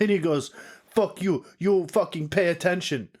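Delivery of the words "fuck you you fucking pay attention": heavy put-on Eastern European accent. Retelling what a big guy on skis said to him, in a thick eastern european accent. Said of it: "He had a thick e- Eastern European accent".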